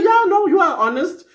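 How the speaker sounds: high, mock-sweet sarcastic tone. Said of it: "they will have to be sarcastic too".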